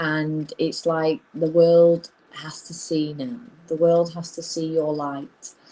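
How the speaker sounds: usual speaking voice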